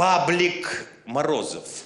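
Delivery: slow, loud punchline delivery.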